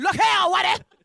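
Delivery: very high, loud, shrill voice. Teaching delivery with hand, leg and voice: blaxploitation film character voice.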